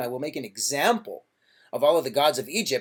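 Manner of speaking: usual speaking voice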